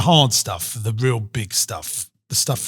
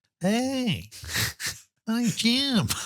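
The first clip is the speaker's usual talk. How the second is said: very high, swooping put-on character voice; 12 semitones higher, 6 dB quieter than usual. Doing a self-introduction in another man's voice: Jim's voice. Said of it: "I'll do it in his voice".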